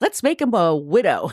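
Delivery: plain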